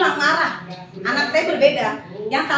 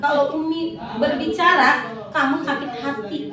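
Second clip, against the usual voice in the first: plain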